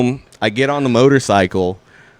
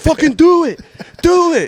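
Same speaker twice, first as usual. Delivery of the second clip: mock livid yelling, very high-pitched and drawn out; 4 dB louder than usual. Retelling a fight in which a coworker threatened to punch: imitating own past yelling. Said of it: "And I just kept yelling at him".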